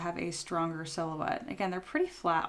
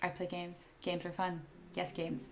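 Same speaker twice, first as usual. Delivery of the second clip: dead-level, expressionless, flat monotone drone; 7 dB quieter than usual. Retelling something Ferret says: imitating a monotone voice. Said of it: "says in a monotone voice".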